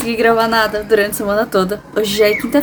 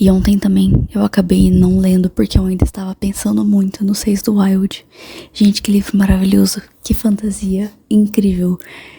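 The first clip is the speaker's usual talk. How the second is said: low, quiet, soft voice. Talking about a finished book early in the morning, speaking softly. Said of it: "Tô falando baixinho porque tá de manhã".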